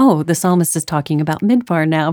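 plain

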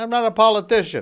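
high, loud, bad fake New Yorker accent. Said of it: "what do you call that accent right there that you're doing".

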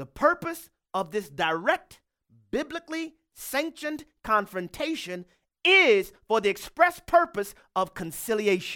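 very slow, deliberate, word by word delivery. A preacher addressing brothers and sisters about a verse, very slow. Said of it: "I'm going to say this very slowly".

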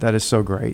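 ordinary delivery

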